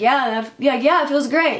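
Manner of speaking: mock-sincere sarcastic tone. Retelling their answer when he asked if it felt okay, retelling a sarcastic reply. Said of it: "I'm being so sarcastic".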